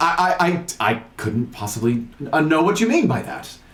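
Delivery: stuttering. In a tabletop role-play, voicing a character being questioned, stuttering. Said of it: "He he stutters".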